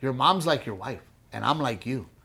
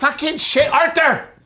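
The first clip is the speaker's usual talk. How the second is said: very high, shrill, loud yelling; 7 dB louder than usual. Speaker describing his potty-mouthed seventy-year-old mom, imitating mom yelling. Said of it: "she's always yelling".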